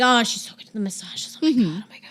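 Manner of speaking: gushing, raving, rant-and-rave manner. Imitating a late coworker raving about a colleague's massages: imitating Dennis ranting and raving. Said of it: "My voice isn't deep enough for it".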